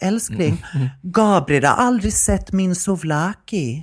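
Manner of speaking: whiny, self-pitying. Retelling what one guy said to his boyfriend, imitating a self-pitying voice. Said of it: "lägger den ena killen på sig så här".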